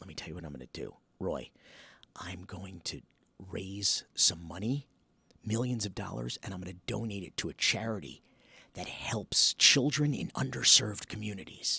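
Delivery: hushed whisper. Demonstrating a whisper test with a harmless example: whispering. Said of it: "why are we whispering?".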